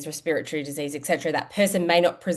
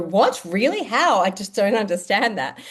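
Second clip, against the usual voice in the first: play-acted gobsmacked, baffled, pitched-up astonished disbelief; 5 semitones higher, 4 dB louder than usual. Retelling how health-literate people react, imitating gobsmacked people. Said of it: "are just gobsmacked and go".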